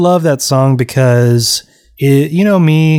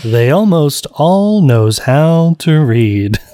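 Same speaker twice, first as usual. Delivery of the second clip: slow, proper radio-announcer read. Asked to say a line just like a radio, radio announcer voice. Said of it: "with a very proper English accent. ... I just mean like a radio".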